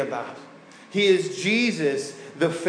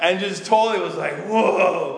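ordinary delivery

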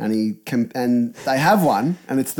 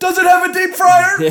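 strange, loud, very high-pitched voice; 6 dB louder than usual. Retelling a scene where Homer questions a salesman, weird loud Homer voice. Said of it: "in the most weird loud voice".

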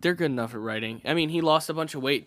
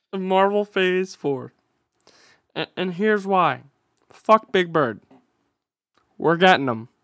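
put-on frog puppet voice, higher and louder; 5 semitones higher, 7 dB louder than usual. Someone just asked why you sound exactly like him; carry on in a Kermit the Frog voice. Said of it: "Why do you sound exactly like him?".

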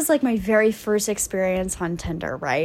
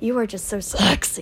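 mock growl in a man's manner. Retelling what a man with bad breath said to the speaker: imitating his growl. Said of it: "growls at me".

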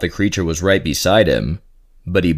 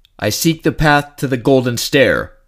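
words spat out, high, voice cracking and breaking; 7 semitones higher than usual. Narrator reads a man answering a creature looming over him; spat out, voice cracking. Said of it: "Mattias spat out. He was not proud of how his voice cracked".

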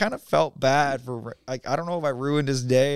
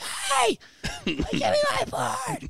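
very high, squeaky seagull-like call. Retelling calling to a guy to give back a board, seagull-like squeak. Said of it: "I sound like a goddamn seagull".

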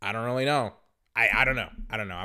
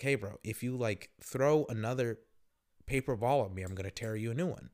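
coldly calm, cold voice, quieter; 5 dB quieter than usual. Speaker retelling warning a boy throwing paper balls at him: retelling a calm, cold threat. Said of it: "I said it calm and I said it coldly".

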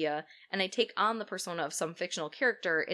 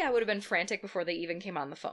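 ordinary talk

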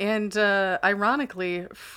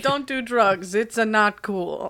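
put-on Italian plumber voice; 3 dB louder than usual. Joking about the Mario movie, doing a Mario impression. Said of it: "I hope Chris Pratt says that".

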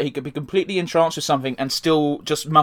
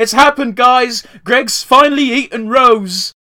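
high, loud, shrieking screaming outburst; 8 semitones higher, 7 dB louder than usual. Retelling a comic in which Greg shows Pearl his fusion: imitating Pearl screaming. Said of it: "it just cuts to Pearl screaming".

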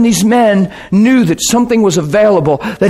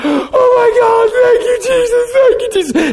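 mock crying profusely, very high, sobbing. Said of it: "he's crying profusely".

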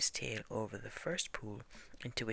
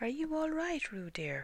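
worried, anxious calling out, very high-pitched; 14 semitones higher than usual. Reading a story, Kanga calls to Roo after he goes down a waterfall; anxious. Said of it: "Called Kanga anxiously".

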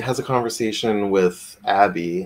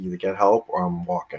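stern put-on voice, lower and quieter; 4 semitones lower, 6 dB quieter than usual. Retelling how Mac holds her by the shoulders: imitating Mac sternly.

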